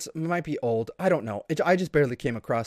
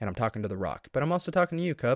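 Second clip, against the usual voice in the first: ordinary delivery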